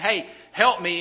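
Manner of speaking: ordinary delivery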